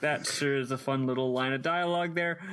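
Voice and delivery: ordinary delivery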